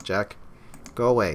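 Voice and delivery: plain reading voice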